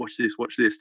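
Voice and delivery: ordinary talk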